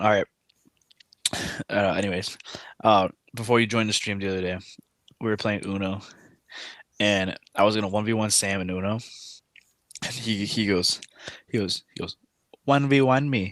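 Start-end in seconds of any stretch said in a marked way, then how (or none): 12.6-13.5 put-on Indian-sounding accent, pitched up. Retelling how Sam challenged him during a game of Uno, imitating Sam's Indian-sounding accent. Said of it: "and it sounded Indian".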